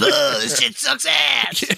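very high, croaking, creaky cartoon frog voice. Voicing what the big frogs in the pond say, frog voice. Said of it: "That was a pretty good frog impression".

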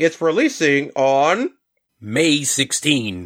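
robot voice, muffled as if through a bottle. Announcing a collection's release date, holding a bottle in front of the mouth: robot voice. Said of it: "in like a robot voice as I hold my, you know, bottle in front of my mouth".

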